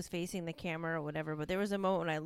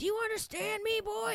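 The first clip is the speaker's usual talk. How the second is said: mock very high-pitched, shrill screaming. Retelling how camp staff yell at children: imitating someone screaming. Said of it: "screaming at him, like".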